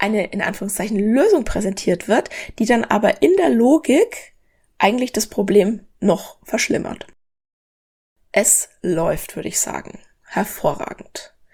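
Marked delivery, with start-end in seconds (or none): 8.3-11.3 hushed, murmured sarcastic aside with faux admiration. A speaker makes an ironic aside, then flags it as irony: sarcastic. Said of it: "Ironie off".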